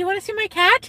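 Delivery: very high pet-talk voice. Retelling offering to show someone a cat, the speaker uses the voice for talking to cats. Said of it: "that's how I talk to my cats".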